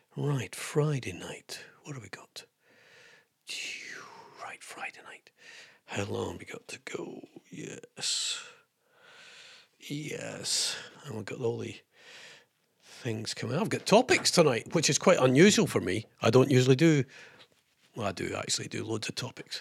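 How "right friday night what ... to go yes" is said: much softer whispering. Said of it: "I don't know why I'm whispering like this".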